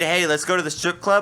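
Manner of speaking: normal talking voice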